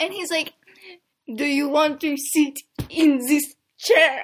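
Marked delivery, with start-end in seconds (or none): 1.3-4.2 very loud, very slow, bad fake French accent. Retelling what a man asked her, in a bad french accent. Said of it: "I don't have the best French accent".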